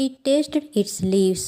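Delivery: ordinary delivery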